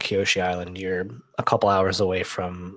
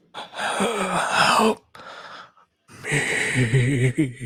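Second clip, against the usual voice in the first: put-on elderly voice, pitched higher; 6 semitones higher than usual. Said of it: "Why does it sound like an old man?".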